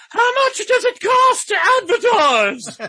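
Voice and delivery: put-on very high, very loud old-lady dowager voice. Speaker recalls early phone calls asking about advertising; wealthy dowager impression. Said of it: "let me do that voice again".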